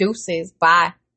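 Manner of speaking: ordinary talk, nothing marked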